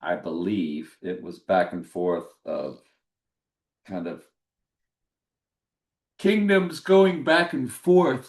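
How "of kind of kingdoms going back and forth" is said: slow, raised words stretched by a yawn. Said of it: "trying to talk and yawn at the same time".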